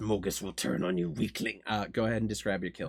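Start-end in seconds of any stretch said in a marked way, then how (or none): 0.0-1.6 clenched-teeth mutter, lower, quieter, slower. The narrator voices the grievously wounded Mogus: Mogus muttering through clenched teeth. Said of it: "muttering through clenched teeth".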